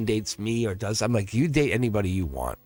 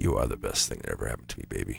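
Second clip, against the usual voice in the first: soft, breathy ASMR whisper; 14 semitones lower, 7 dB quieter than usual. Showing off the speaker's own asmr voice with a line, asmr voice. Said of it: "my A S M R voice".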